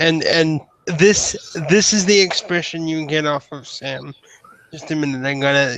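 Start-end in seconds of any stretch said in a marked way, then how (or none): none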